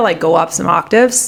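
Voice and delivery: ordinary talk, nothing marked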